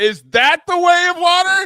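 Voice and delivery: shrill, very high, loud shouting. Recounting watching The Way of Water, retelling own yell. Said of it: "I'm just yelling".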